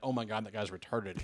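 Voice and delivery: ordinary talk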